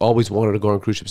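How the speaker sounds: normal talking voice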